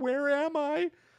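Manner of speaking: play-acted crying voice, very high, sobbing. Retelling a man at a mirror screaming where he is, imitating someone crying. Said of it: "And he's crying".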